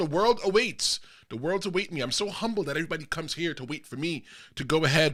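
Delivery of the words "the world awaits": normal talking voice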